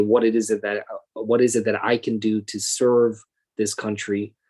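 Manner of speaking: ordinary talk, nothing marked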